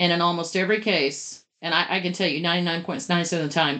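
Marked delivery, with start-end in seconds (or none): 1.6-3.8 rattled off too fast, rushed. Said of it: "I'm talking too fast".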